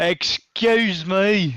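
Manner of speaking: put-on British accent, called out. Calling over the bartender in character: british accent. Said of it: "Does it in the British accent".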